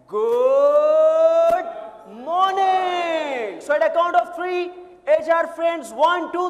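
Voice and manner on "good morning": very rhythmic delivery, strong beat on every syllable. Speaker shows HR friends how to answer the greeting, in a rhythmic voice. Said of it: "in a very rhythmic voice".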